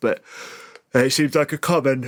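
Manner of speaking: talking through a yawn. Mid-conversation, the speaker yawns while talking: yawning. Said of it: "sorry, I'm yawning".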